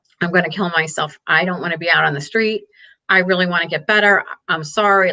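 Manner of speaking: mock tearful pleading with put-on crying. The speaker recounts what a man said after she confronted him, imitating him crying, pleading. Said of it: "he was crying and he was like".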